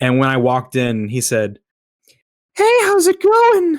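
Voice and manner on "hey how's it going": "hello" very high, squeaky and breathy. Retelling a man in a bathroom greeting them: imitating his high-pitched voice. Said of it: "what he was saying was so high pitched".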